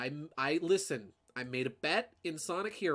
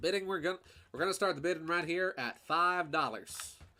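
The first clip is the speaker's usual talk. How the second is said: rapid, rattled-off auctioneer patter; 3 semitones higher than usual. Asked for an auctioneer voice, starting the bidding in a fast-talking auctioneer voice. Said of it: "an auctioneer voice, the fast talking voice".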